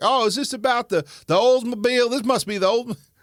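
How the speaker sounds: loud, very high, exaggerated, put-on Southern accent. Retelling how he answered by naming random cars, getting real Southern. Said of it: "I'll get real southern real quick".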